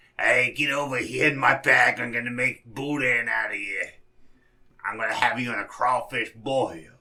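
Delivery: put-on old crone character voice. Picturing a next d&d character, speaking in an old hag voice. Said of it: "my next D and D hag. It's just gonna be her going".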